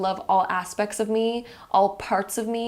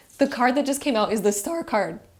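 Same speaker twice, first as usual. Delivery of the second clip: voice cracking and breaking; 3 semitones higher than usual. Announcing to viewers the tarot card that just came out, voice cracking. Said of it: "my voice just cracked even saying that".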